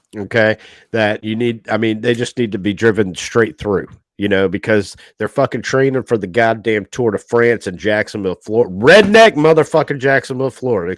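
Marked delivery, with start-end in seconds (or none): 8.8-11.0 loud, raised voice, swooping ranting outburst. Speaker complaining about bicyclists in Jacksonville, Florida, raised voice. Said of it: "Excuse me for for raising my voice".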